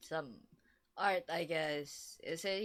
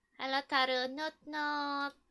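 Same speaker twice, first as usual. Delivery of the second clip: unusually high, slow, drawn-out voice; 8 semitones higher, 4 dB louder than usual.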